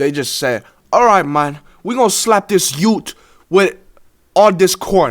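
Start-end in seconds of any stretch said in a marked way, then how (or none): 0.9-4.8 clumsy, bad, put-on British accent. Quoting gang members in a murder story, in a bad UK accent. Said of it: "I can't even do the U K accent".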